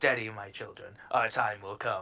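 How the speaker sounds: low, hushed mutter under the breath. Before leaving, the speaker addresses one of the mascots; muttered under breath. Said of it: "mutter under my breath to one of the mascots".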